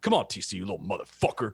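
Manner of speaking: low, pumped-up self-talk voice. Retelling how Tron talks himself up over a tee shot: imitating Tron pumping himself up. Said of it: "That's his pump up right before he goes to hit it".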